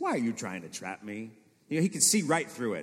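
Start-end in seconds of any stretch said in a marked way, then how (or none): 0.0-1.3 mock, slightly cocky and self-assured tone. Speaker acts out Jesus answering men trying to trap him: put-on cocky tone. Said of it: "maybe the tone was a little cocky when he said this".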